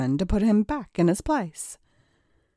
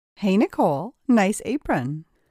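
plain

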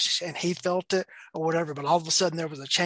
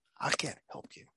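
mock firm, stern, hushed whisper; 8 dB quieter than usual. Retelling what he told a man asking for money: imitating his own stern reply. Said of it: "just looked at him just very sternly".

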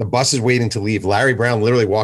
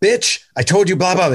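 high-pitched, put-on screaming; 9 semitones higher than usual. Retelling a player on the phone: imitating someone screaming on the phone. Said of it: "He's screaming on the phone".

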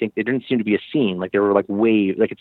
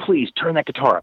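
mock begging plea, pitched up; 5 semitones higher than usual. Retelling begging a studio producer: retelling a plea. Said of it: "try and beg the producer".

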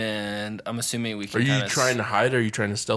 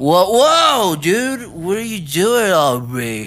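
put-on drunk voice, higher and louder; 8 semitones higher, 10 dB louder than usual. Playing Mork, who decides to pretend he is drunk, as Mork acting drunk. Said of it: "Mork is just gonna act drunk".

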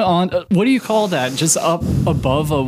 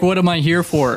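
ordinary talk

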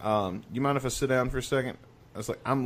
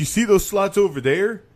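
excited, pitched-up, louder chatter, sounding thrilled; 9 semitones higher, 7 dB louder than usual. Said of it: "I'm not making fun of his accent".

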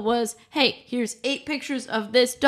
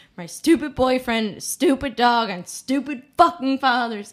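mad tone. After getting suckered into a photo app, the speaker vents, angry. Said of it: "I'm so mad".

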